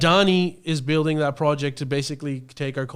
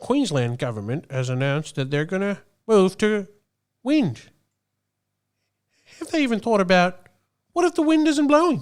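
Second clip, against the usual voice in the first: high commentator voice, pitch swinging up and around; 5 semitones higher than usual. Doing a rapid-fire impression of Andrew Bolt on wind power: Andrew Bolt impression. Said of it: "King of impressions over here".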